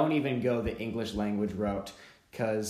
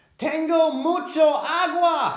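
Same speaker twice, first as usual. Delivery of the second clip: very high, loud, thrilled shout, "agua" stretched long; 9 dB louder than usual. Retelling how he pointed at a big lake and yelled at the speaker, retelling an excited yell. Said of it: "he yells at me".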